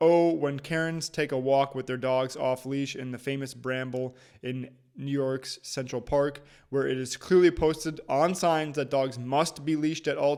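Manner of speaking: plain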